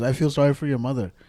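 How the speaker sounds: plain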